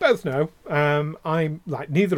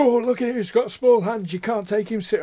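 fake Yorkshire accent, pitched up; 7 semitones higher than usual. Imitating critics of a public figure, in a put-on Yorkshire accent. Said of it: "doing a Yorkshire accent for Americans".

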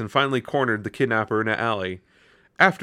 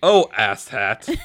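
proud, self-pleased tone; 4 dB louder than usual. Reading a story aloud, the speaker voices the man who found a glowing frog: proud tone. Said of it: "I said it like he was proud of that".

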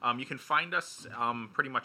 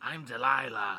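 put-on smoker's radio host voice. Imitating a radio host's voice for the others: imitating Delilah's voice. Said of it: "that's not how she sounds".

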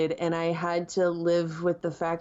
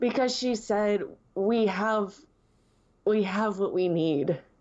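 voice about to break into crying; 3 semitones higher than usual. Guest talking about closure with Leia, on the verge of crying. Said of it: "I'm going to start crying".

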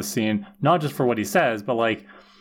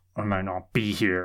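low, soft mutter through gritted, clenched teeth; 5 semitones lower, 4 dB quieter than usual. Recapping a scene, acting out Dawn answering Willow through gritted teeth. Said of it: "gritting through her teeth".

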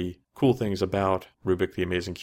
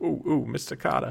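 high, pitched-up, creaky put-on character voice; 7 semitones higher than usual. Imagining an actor doing his famous sitcom role: Horshack voice. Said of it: "But I can do Horshack".

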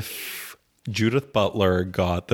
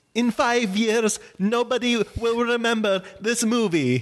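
very high, slow, drawn-out fake Italian accent. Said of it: "in [name]'s Italian accent".

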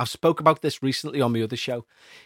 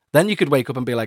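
ordinary talk

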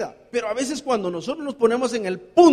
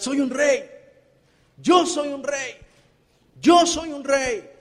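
put-on half-raised shouting cry, drawn out slowly; 3 semitones higher than usual. Retelling a story of a man who began shouting: imitating someone shouting. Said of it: "empezó a gritar".

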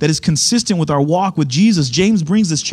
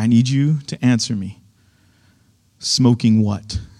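mock-serious preacher voice, pitched much lower; 6 semitones lower than usual. In a joke, a pastor answers a congregant's report about smoking: imitating a pastor turning serious. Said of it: "he gets real serious".

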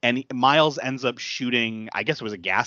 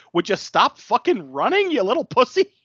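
very high, loud, mocking, taunting jeer; 10 semitones higher, 5 dB louder than usual. Retelling a chase scene where one character shoots at another: imitating someone taunting. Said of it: "taunting him".

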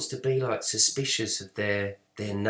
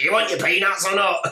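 put-on very high, shrill, loud old-crow stewardess voice; 10 semitones higher, 7 dB louder than usual. Comparing today's flight crew with the past: imitating an old-crow air hostess. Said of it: "some old crow".

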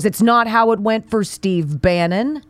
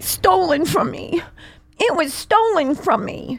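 put-on high, whiny, complaining little-boy voice; 7 semitones higher than usual. After a soundbite plays, the host mocks the man, imitating a childish whine. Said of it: "Doesn't he sound like a child?".

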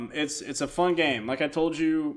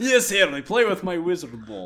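put-on Eastern European accent, much higher; 4 semitones higher than usual. Riffing with the group about Dumbledore, deliver his line in an Eastern European Dumbledore voice. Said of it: "It's the Eastern Bloc version of Dumbledore".

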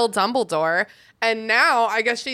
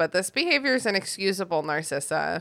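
usual speaking voice

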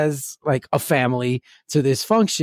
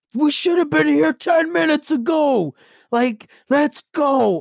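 yelling, pitched very high; 11 semitones higher than usual. A father retells yelling at his daughter for being late to school. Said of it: "I'm like yelling at her".

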